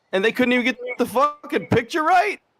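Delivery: high, loud, furious rant.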